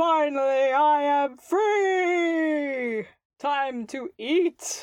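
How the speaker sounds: beastly monster roar, "free" drawn out. Narrating the game to the players and voicing Jeff, Jeff roaring. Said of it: "you hear Jeff roar out".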